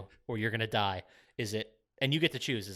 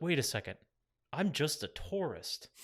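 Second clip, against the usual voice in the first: unbothered, emotionless, blank matter-of-fact tone; 4 semitones higher than usual. Quoting a character's line from a film: imitating a flat delivery. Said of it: "no inflection in his voice".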